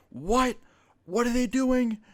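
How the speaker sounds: voice shooting up, very high. Retelling a phone call, imitating another mother's raised voice. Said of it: "her voice raise".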